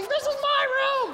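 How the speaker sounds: high-pitched, screaming yell. Retelling screaming back at a woman found in the hotel room: retelling own screaming. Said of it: "So I start screaming".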